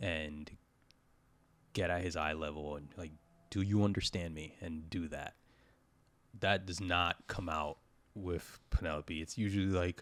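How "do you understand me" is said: put-on stern, fatherly dad voice. Acting out scolding the child Cruzy, in a put-on stern dad voice. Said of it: "put on the stern dad voice".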